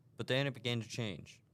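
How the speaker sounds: ordinary delivery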